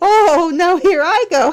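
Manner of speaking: high, loud words bubbling through giggles. Showing off the Piggler Gigglers, then catching their giggles: giggling while talking. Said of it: "I can't stop giggling".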